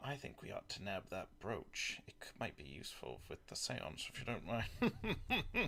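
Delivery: very quiet, breathy, secretive whisper. Playing a character who leans close and whispers to Pella: in-character whisper. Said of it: "lean close to, to Pella and whisper in her ear".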